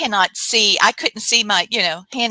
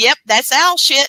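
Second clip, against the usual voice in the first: high, amused, chuckling, laughing voice; 5 semitones higher, 4 dB louder than usual. Retelling a recorded voice that laughed at a fall: imitating a laughing voice. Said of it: "the E V P laughing and said".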